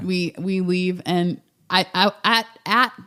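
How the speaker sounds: nervous stammering stutter. Recounting to the listener a moment of nearly confessing, with nervous stuttering. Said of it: "I'm stuttering right now. Like I'm nervous about it again".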